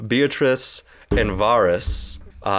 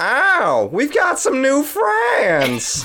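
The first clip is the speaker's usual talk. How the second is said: drawn-out, very high, swooping sing-song nanny voice; 3 dB louder than usual. Voicing a character who greets new friends from a chaise lounge: nanny voice. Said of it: "is this the nanny voice that you were practicing?".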